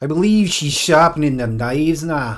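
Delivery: Scottish accent, play-by-play. Asked to narrate what is going on, the speaker does it in a Scottish accent. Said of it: "narrate what I'm doing in a Scottish accent".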